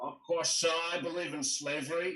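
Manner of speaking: put-on Texan accent. Retelling how a late speaker opened with shocking statements: Tristram Engelhardt's Texan accent. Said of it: "he had this like Texan accent".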